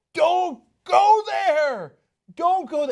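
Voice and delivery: very high, slow, drawn-out shout. Acting out a warning to friends walking into an ambush: imitating own yelling. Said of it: "I'm yelling at 'em, like".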